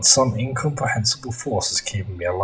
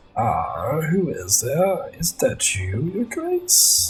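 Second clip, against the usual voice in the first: put-on croaky old storyteller voice, pitched up; 6 semitones higher than usual. Playing a game, voicing the old storyteller greeting someone, croaky old storyteller voice. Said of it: "I tried to put on a cr croaky voice".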